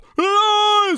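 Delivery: bright teeth-forward scream, very high and drawn out. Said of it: "we get our teeth up".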